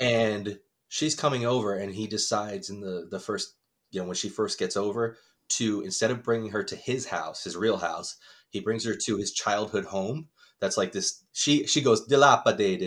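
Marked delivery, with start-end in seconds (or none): 12.1-12.9 put-on Trinidadian accent, word dilapidated savored. Retelling how she reacts on arriving at his childhood home: put-on Trinidadian accent. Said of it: "Is that racist for me to make that voice?".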